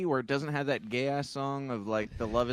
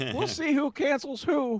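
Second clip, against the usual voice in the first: put-on frog puppet voice; 12 semitones higher than usual. Retelling a favorite movie part where Kermit comes out: Kermit voice. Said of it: "Kermit comes out and he's like".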